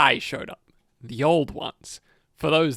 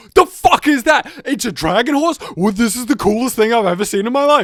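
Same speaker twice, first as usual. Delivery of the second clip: high, loud, mock amazed gushing. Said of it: "And then you go".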